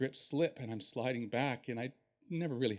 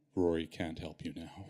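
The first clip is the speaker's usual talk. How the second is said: eerily calm, chilling, bone-chilling acted delivery; 6 semitones lower than usual. Retelling what the artist said from on top of him: imitating a bone-chilling calm voice. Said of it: "this bone-chilling, calm voice".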